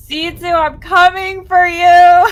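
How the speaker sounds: very loud, high, shrill in-character bellow. Yelling across the field in character before dragging a body: yelling a threat in character. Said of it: "I'm gonna yell out".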